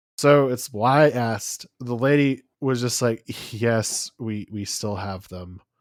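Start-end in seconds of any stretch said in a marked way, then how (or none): 3.5-5.6 put-on defeated, resigned, lower and quieter. Retelling the lady's reply to his question, imitating her defeated tone. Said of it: "Just like in the most defeated tone".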